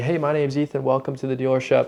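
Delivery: listless, flat, low-energy monotone with no spark. Recalling his first days greeting people at the dealership: mock low-energy greeting. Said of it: "I was super low energy".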